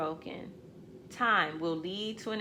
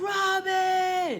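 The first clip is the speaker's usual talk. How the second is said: high, loud yell. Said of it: "My mother was a yeller".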